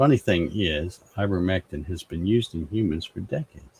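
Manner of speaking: ordinary talk, nothing marked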